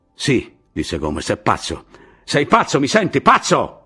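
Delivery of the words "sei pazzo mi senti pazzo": high-pitched, loud yelled outburst. A man shouts at Martì, who is bent over his map, shouting. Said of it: "Gridò a Martì".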